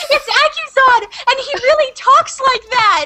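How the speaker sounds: high, giddy, excited starstruck fangirl outburst. Retelling their reply to a raid leader while starstruck: imitating own excited spazzing out. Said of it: "spazzing out more than normal".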